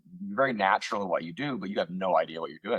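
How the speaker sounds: ordinary delivery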